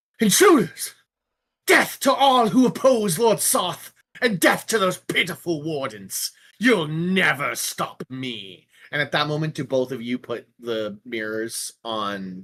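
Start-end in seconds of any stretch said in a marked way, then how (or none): 0.2-8.7 menacing, high-pitched, shouted villain battle cry. Voicing a hovering enemy as players teleport next to her: villain shouting threats. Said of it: "she turns and goes".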